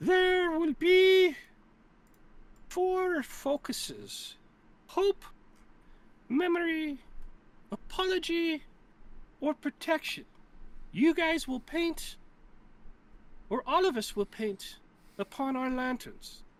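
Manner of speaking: put-on high-pitched elderly heron voice. The game master voices an old heron speaking to the players: old heron voice. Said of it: "you see an old heron. / you see an old heron. And she looks at you and she goes, / And she looks at you and she goes, / you see an old heron".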